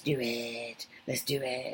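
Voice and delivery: very low, very soft, slow creepy voice. Talking to listeners, repeating a phrase in a creepy voice.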